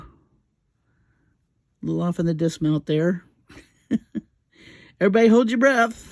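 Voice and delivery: talking while laughing, giggling through words. Gluing small pieces and missing the placement, laughing while talking. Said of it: "I gotta stop laughing".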